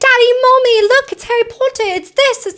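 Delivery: put-on English accent, very high. Retelling what a young girl from england on the train said: imitating an english accent. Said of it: "They had the accents".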